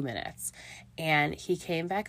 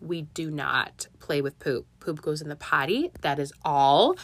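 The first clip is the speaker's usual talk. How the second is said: mock firm, no-nonsense, raised scolding mom voice; 3 dB louder than usual. A mom retelling how she scolded her child, retelling her stern mommy voice. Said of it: "pull out the mean mommy voice".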